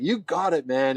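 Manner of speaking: put-on speaking with a German accent. Retelling how Marcel encouraged him at a tall ledge: Marcel's German accent. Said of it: "in his German accent".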